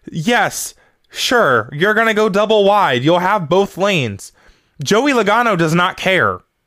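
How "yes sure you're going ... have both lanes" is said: put-on yelling, higher. Retelling a reaction to a race restart: retelling yelling at the tv. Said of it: "I was yelling at my T V".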